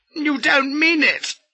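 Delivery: very high, yelped cry. The narrator reacts to a threat from the man before him, yelping. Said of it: "I yelped".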